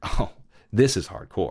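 ordinary delivery

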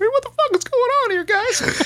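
squeaky, very high-pitched voice. Retelling a man's reaction when the train stops, the speaker uses that Bert voice. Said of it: "in that Bert voice".

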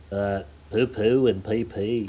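Liverpool accent. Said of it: "that was your Liverpool accent there".

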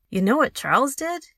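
loud, high, insistent, demanding tone. Laurie, home from school, follows the narrator through the door: demanding. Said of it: "he demanded".

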